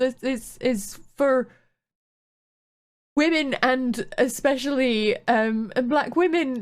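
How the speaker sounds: getting emotional, pitch rising. In a conversation, the speaker keeps talking while getting emotional. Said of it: "getting emotional as well".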